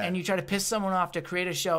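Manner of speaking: normal talking voice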